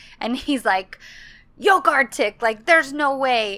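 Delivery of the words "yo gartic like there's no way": indignant, affronted tone. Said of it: "hangs up the phone all indignant".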